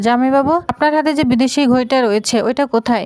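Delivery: ordinary delivery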